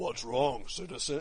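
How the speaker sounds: scrambled, distorted, demonic-sounding disguised voice. Retelling how the game character answers: imitating a witness-protection disguised voice. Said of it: "he sounds like he's in a witness protection plan".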